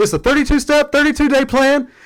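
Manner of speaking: overeager, high-pitched, rushed delivery.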